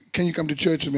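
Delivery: ordinary delivery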